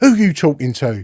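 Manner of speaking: ordinary talk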